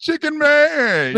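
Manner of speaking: high-pitched call, way up, drawn out and held. Retelling a film scene where a caller phones someone: Samuel L. Jackson impression.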